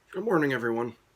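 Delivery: groggy morning voice cracking upward mid-word. Greeting everyone right after waking up, voice cracking. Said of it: "Excuse me for the voice crack".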